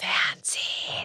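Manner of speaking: soft, hushed whisper under the breath. Retelling in german how the speaker answered someone: whispered 'fernsehen'. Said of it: "habe ich dann so geflüstert".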